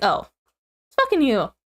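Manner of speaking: imitated, mock unimpressed, blasé tone. Retelling how friends reacted after being scared: imitating a blasé reaction. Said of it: "such a blasé reaction of just like".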